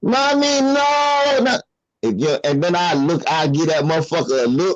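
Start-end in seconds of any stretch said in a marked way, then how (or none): 0.0-1.6 put-on high-pitched little child's voice yelling, drawn out. Retelling a little boy yelling for his mommy: imitating a child yelling. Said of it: "He in here yelling".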